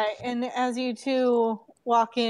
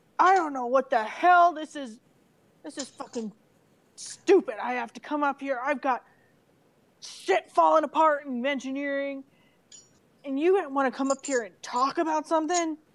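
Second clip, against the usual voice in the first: vicious, savage cursing and swearing rant; 3 semitones higher than usual. Speaker voices the ship's engineer Dash walking in last, swearing savagely. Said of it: "he swears savagely".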